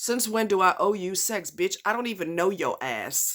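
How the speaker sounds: ordinary talk, nothing marked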